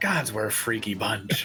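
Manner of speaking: quiet muttering under the breath. Reacting in character as a figure pops up again: muttering under breath. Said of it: "I'm just gonna mutter under my breath".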